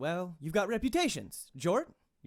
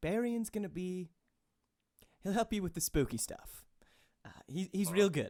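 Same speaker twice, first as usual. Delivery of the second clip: somewhat hushed, half-quiet, lowered voice; 3 dB quieter than usual. A game master voices a character turning to the players: hushed tone. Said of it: "in a somewhat hushed tone".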